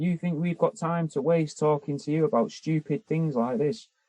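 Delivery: put-on angry, scornful shouting. Retelling how a staff member at a cats' home shouted at them: imitating someone shouting angrily. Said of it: "shouting at me".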